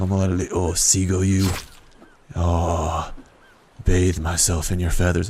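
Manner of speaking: rough put-on Australian accent with drawn-out "oh". Speaker gathering feathers from a seagull, in an Australian accent. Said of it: "I was going for an Australian accent there".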